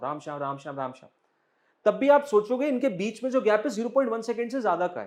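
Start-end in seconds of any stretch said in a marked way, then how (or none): 0.0-1.1 words rattled off very fast, back to back, rapid-fire. Explaining gaps between spoken words, saying the two words very fast. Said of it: "बहुत तेज बोलने लग जाऊं".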